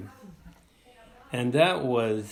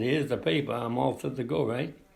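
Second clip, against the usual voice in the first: ordinary talk, nothing marked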